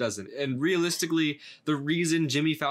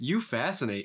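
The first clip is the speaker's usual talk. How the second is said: spaced-out, goofy, mind-wandering delivery. Describing an actor's odd interview habits, then imitating him: Jeff Goldblum impression. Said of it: "space out when they're asking a question with this goofy smile".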